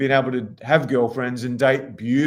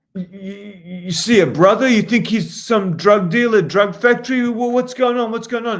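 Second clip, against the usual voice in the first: loud, high, put-on furious outrage; 8 semitones higher, 5 dB louder than usual. Retelling how a man acted offended in front of some girls, mock-angry. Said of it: "he acted like he was really pissed off".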